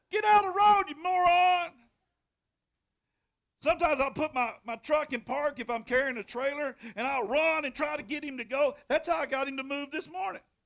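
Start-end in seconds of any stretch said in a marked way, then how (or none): 0.1-1.7 high, loud holler. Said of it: "I holler at him".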